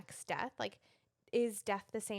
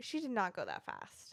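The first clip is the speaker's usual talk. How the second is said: plain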